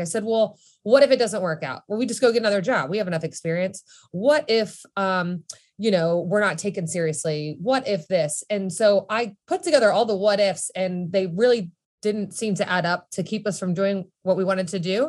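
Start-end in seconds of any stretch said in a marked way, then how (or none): none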